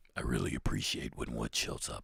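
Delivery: devil voice, whispered. Asked to do it again, the speaker repeats his line in his Satan voice. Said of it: "That's your Satan voice".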